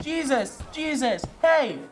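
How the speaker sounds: put-on loud calling out. Retelling calling out as jesus walked by: imitating calling out loudly. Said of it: "I started calling".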